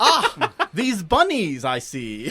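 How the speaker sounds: very slow, lofty, grand speech. Joking about a game character who talks like Shakespeare: Urianger's Shakespearean speech. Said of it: "He talks like Shakespeare".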